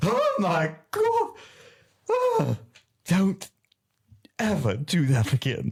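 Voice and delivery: very high, swooping, jumpy, frightened startled cry. Voicing a woman whom the player's stealth scares, startled and scared. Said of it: "your stealth completely scares her though".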